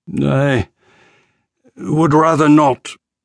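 groaned words. Narrator reads an injured officer's reply when asked his name, groaning. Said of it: "He groaned".

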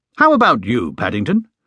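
plain

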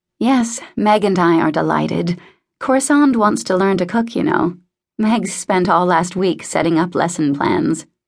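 ordinary talk

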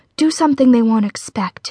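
ordinary delivery

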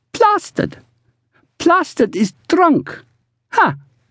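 very high-pitched, excited, laughing voice. She calls to her sister, laughing and excited. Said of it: "She laughed and called to her sister excitedly".

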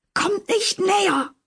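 shrill, very high, terrified scream of fear. A man who fled behind the counter grabs a knife and shrieks: shrieking in fear. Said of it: "kreischte er angsterfüllt".

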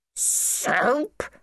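choked, high-pitched crying voice. The vicar, a metal ring stuck between his teeth; choked. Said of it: "choked the vicar".

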